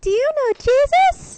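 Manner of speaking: very high-pitched, very loud voice. Retelling how a girl from a booth came up to him, very high-pitched voice. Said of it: "comes up in this very high pitched voice".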